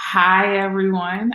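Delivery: anxious-sounding. An author greets listeners at the start of an interview, nervous. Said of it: "I sound so nervous right there".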